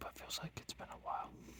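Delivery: very soft whisper. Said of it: "I don't know why I'm whispering".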